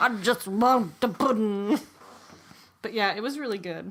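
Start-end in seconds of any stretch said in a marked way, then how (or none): 0.0-1.8 put-on mumbling, mumbly older man's voice. Retelling a woman's line from her show, it comes out in a Bill Cosby voice. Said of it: "she turned into Bill Cosby in my voice".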